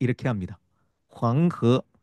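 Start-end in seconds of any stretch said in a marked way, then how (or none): 1.1-1.8 황허 pronounced the Mandarin way. Explaining a Chinese place name, giving the Mandarin Chinese pronunciation. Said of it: "실제 중국 중국식 발음으로 들려주겠습니다".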